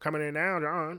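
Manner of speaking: put-on old-timey 1920s news announcer voice. Speaker riffing on the slap heard around the world, in an old-timey 1925 headline voice. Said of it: "You know that voice".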